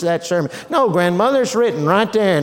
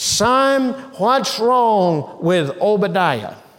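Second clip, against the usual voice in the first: ordinary delivery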